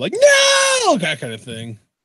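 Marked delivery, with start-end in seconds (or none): 0.1-1.0 very high, drawn-out, stretched, panicked "no". Showing own usual reaction when a goal goes in: imitating a panicked no.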